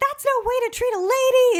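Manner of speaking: loud high-pitched yelling. Retelling a scene where Miss Piggy scolds people: imitating Miss Piggy yelling.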